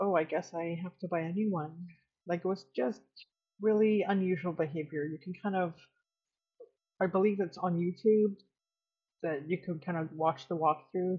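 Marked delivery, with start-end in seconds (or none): 0.0-1.9 put-on smugness. Retelling what a woman said when she was refused, mock-smug. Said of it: "she smugly was like".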